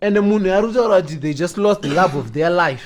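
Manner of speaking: ordinary delivery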